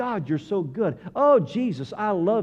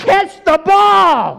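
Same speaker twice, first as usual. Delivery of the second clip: very high, very loud shrill scream, "ball" drawn out; 11 semitones higher, 12 dB louder than usual. Imagining someone watching football at home, imitating screaming at the TV. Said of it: "has screamed at the TV".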